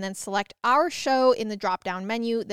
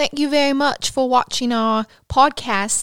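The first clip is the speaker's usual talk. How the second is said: put-on British accent; 3 semitones higher, 6 dB louder than usual. Signing off a podcast episode, a host speaks in a put-on british accent. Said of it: "how was my accent?".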